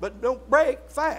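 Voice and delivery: BREAK stressed, high and slow. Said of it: "There's meaning there".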